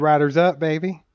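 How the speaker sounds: plain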